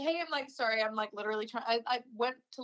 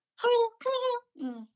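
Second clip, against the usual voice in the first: very high-pitched voice; 13 semitones higher than usual. Retelling calling out possible dog names alone, imitating own dog-calling voice. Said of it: "the dog voice test".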